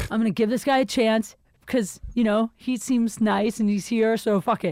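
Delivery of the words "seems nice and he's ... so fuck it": ordinary talk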